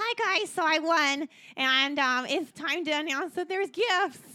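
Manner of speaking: very high small voice. In the game, the crowned winner announces that it's time for gifts; big guy with a tiny voice. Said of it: "It was a big guy with a tiny voice. ... Big person with a little voice".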